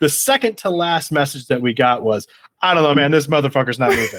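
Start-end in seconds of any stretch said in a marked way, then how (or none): 2.6-4.2 put-on annoyed, irritated announcer voice. Retelling a later train announcement about somebody on the tracks: imitating an annoyed announcer. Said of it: "just real annoyed".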